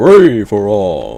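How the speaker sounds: big announcer voice, "all" held long. Showing off an announcer impression, in a Smash Bros announcer voice. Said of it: "I think I have a pretty good Smash Bros announcer voice. Listen".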